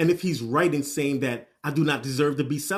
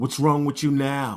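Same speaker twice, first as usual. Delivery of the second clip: mock-irritated, annoyed tone. Retelling how a man questioned her crying, imitating an irritated tone. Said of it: "asks in a very irritated tone".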